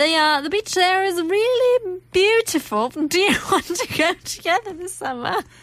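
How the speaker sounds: high-pitched put-on voice, up an octave. Playing a character in a skit, voice up an octave. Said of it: "You went up an octave".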